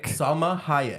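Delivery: very slow, drawn-out, stretched word. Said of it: "Can you say it slowly?".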